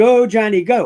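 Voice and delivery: normal talking voice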